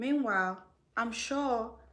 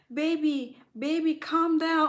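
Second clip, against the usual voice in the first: put-on soothing plea, high-pitched and loud; 6 semitones higher, 6 dB louder than usual. Retelling how a man begs his partner: imitating a man begging. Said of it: "you will still see this man begging".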